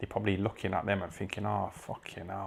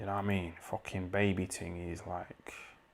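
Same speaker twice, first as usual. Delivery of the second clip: ordinary talk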